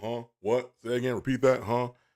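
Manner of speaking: usual speaking voice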